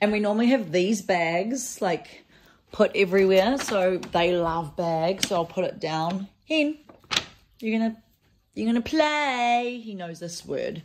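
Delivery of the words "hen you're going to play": high, slow pet-calling voice, play stretched out. Calling the hen over to come and play, in the special pet-calling voice. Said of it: "I always say it in that voice".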